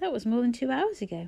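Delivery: ordinary delivery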